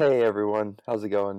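worn-out voice, slightly shot. Greeting listeners after being introduced as a guest: voice sounds a little shot. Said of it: "sorry my voice sounds a little shot".

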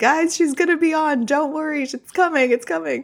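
very high, eager, excited voice. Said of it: "I've just wanted to say".

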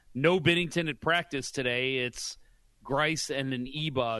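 ordinary talk

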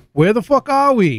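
put-on high classic Brooklyn accent. Telling the story behind a show's name, quoting the riders in a Brooklyn accent. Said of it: "in a classic Brooklyn accent to say".

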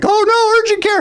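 very high, squealing mock panicked alarm. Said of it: "the whole family's like".

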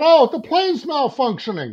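very high, shrill, swooping yell. Speaker retells a plane passenger yelling out: retelling someone yelling. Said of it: "somebody yells out".

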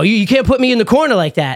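put-on high, chirping, snide taunting tone. Retelling a customer's parting remark on his way out: imitating someone chirping. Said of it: "chirping at me on the way out".

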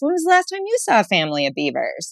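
fast, accusatory tone. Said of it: "I said it so accusatory".

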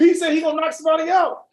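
shrill, very high-pitched, far-carrying scream. Retelling a teammate yelling during a game: imitating a teammate screaming. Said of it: "my teammate is screaming".

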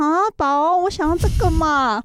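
put-on high, wheedling, cutesy, baby-voiced girlish tone. Trying out a girlish way of talking for him, cutesy girlish voice. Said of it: "我们来尝试给他那种少女般的讲话方式".

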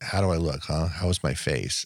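sarcastic, self-deprecating tone. Quoting a dying character asking how he looks: imitating Johnny, sarcastic. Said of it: "that sarcastic thing".

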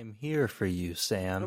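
low, flat, unvarying droning monotone. Acting out how a friend's line would sound, in a mock monotone voice. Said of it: "like monotone voice".

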